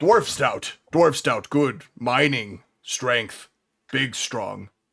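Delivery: orc voice, broken caveman-style grammar. Game master voicing the orc bartender answering the players at the bar, Blarg the orc bartender voice. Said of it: "And you guys make your way to the bar and see a large gray-skinned orcish man. / And you guys make your way to the bar and see a large gray-skinned orcish man. He doesn't have a shirt on, but he does".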